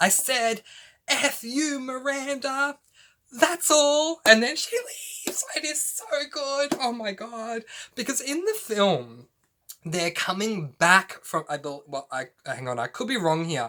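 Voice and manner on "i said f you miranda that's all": mock, drawn-out, slow, rising, high-pitched yelled outburst. Retelling a film scene, one character yelling at another: retelling a loud yell. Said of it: "she yells it loudly".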